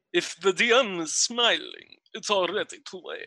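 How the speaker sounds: swooping vampire voice with Transylvanian accent. Tabletop player told to say this in a Transylvanian accent: Dracula voice. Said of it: "say this in a Transylvanian accent".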